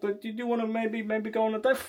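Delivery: unconvinced, hesitant delivery. Coaching someone on asking for a date, demonstrating it said without conviction. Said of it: "speak with a level of conviction".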